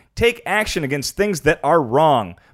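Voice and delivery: ordinary talk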